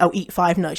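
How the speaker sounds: ordinary delivery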